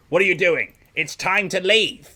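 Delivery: loud, high-pitched urgent shout. She raises her visor to reach the team and calls out: shouting. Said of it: "and shouts like".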